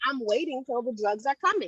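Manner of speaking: normal talking voice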